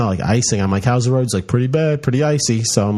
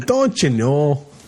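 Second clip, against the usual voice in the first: Minnesota accent that drifts and lands Irish; 4 semitones higher than usual. Asked to say a minnesota phrase again: minnesota accent sounding irish. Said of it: "Now you're from Ireland".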